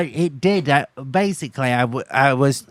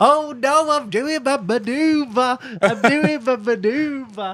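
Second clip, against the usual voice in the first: mock very high, drawn-out, flustered, nervous shout; 12 semitones higher than usual. Retelling calling out a driving test manoeuvre: imitating own nervous move-announcing. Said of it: "shouts the move he's doing".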